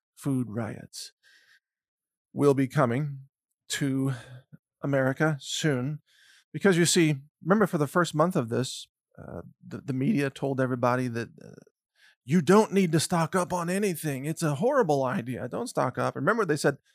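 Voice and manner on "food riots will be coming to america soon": calm and deliberate, much slower. Speaking to an audience about a food collapse, calm and deliberate. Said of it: "I use very deliberately in a calm voice".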